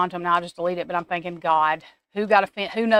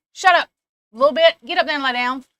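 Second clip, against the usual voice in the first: loud, high-pitched hollering; 7 semitones higher, 6 dB louder than usual. Telling a barking dog to lie down while live: hollering at a dog. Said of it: "I had to holler at my dog".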